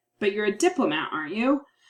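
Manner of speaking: surprised, sarcastic, mocking tone. Demonstrating a tag question used as a sarcastic response: sarcastic. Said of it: "my kind of sarcastic response is like".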